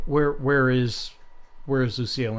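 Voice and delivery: ordinary talk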